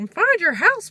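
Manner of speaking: high, loud squeaky voice. After noticing a line sounded cartoonish, repeating it in a Mickey Mouse voice. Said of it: "That sounded like Mickey Mouse".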